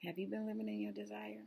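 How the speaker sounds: small, quiet little voice, spoken quickly. Retelling what the voice finally said after a day on the couch, small quiet voice. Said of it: "Small, quiet voice".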